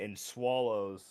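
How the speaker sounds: ordinary delivery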